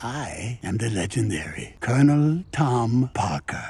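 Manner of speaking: low mock European accent. Telling how Colonel Tom Parker took over the film's scenes, do the Tom Hanks European accent. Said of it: "Tom Hanks' European accent".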